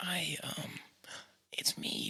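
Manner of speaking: hushed, breathy, quiet, very slow delivery. Imitating a movie line, talking really quiet like Tobey Maguire. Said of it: "talking really quiet in a scene".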